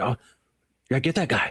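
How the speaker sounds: mock fired-up, fast, excited cheer. Retelling a film scene where a character cheers on a catch: imitating an excited character. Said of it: "he gets all excited for him".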